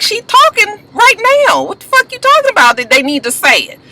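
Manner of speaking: high-pitched, drawn-out, incredulous tone. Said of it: "I was just like".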